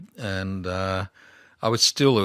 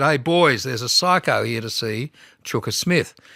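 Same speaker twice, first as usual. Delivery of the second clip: put-on loud yelled-out call; 5 semitones higher, 5 dB louder than usual. Retelling how a man at the police cells yelled to the others: retelling a yell. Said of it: "he yelled out".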